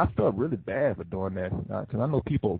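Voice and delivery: ordinary talk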